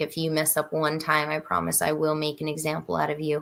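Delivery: ordinary talk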